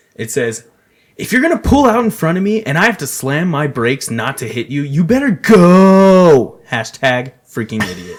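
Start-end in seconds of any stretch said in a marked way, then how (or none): 1.2-8.2 very loud, angry, drawn-out, stretched ranting yell. Reading an all-caps angry tweet aloud: mock yelling, not too loud. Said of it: "I'm gonna read it as if I'm yelling".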